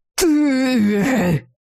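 angry, furious hissing. Narrator voicing a character accusing another, with an angry hiss. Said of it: "гневно прошипел Саэр номер два".

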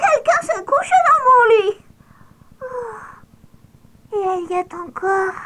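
tiny, piping, squeaky little voice, very high-pitched. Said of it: "cria de sa petite voix pointue".

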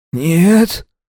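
put-on rasping wheeze. Narrating, held by the hair, tasting blood, answering the men: hoarse wheeze. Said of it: "Прохрипел я".

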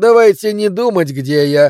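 offhand, dismissive, brushing-off tone. Kessler answers the narrator's question, dismissive. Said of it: "пренебрежительно махнул рукой".

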